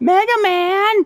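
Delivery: very high, loud cartoon character voice. Announcing this week's news, the speaker breaks into a role impression. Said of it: "That was a good role impression".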